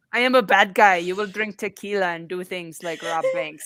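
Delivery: very low pitch with heavily laid-on French accent. Playing Evil George, a bad guy: Evil George Clooney with French accent. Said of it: "I don't know why he's French".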